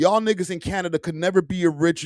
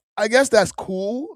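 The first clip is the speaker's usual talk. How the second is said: ordinary talk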